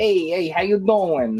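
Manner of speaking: put-on Philadelphia accent. Voicing a toy figure from Philly, in a Guido accent. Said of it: "he sounds like a you know like a Guido".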